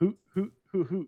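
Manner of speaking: put-on high, stilted, rattled-off hoots. Telling of a man's fake owl call heard nearby: read-aloud fake owl hoot. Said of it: "it sounded like you reading a book on how an owl sounds".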